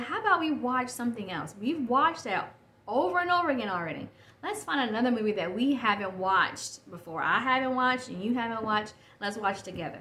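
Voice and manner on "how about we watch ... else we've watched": ordinary delivery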